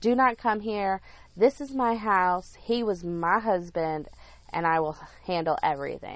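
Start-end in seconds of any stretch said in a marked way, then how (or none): none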